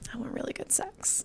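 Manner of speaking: very soft, coy whisper. Retelling a birthday dinner, whispering a request to him: retelling a coy whisper. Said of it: "kinda whisper it to him, like, being kinda coy".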